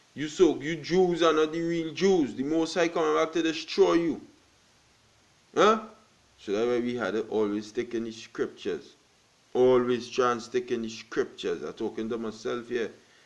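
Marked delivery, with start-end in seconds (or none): 0.2-4.2 put-on street preacher voice, high and screaming. Retelling what preachers outside on the highways say: imitating preachers screaming. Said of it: "screaming and saying".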